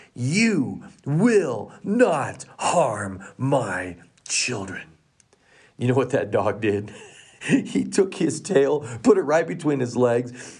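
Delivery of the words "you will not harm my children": authoritative, commanding voice, very slow. Retelling a mother's words to a threatening dog, in a commanding, authoritative voice. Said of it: "in the most commanding, authoritative voice".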